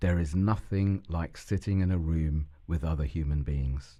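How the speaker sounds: ordinary talk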